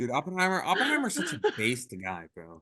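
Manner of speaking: sarcastic, put-on sincerity with swooping pitch. Praising Oppenheimer as a joke: mock-sincere sarcastic praise. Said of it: "[name]'s being totally sarcastic".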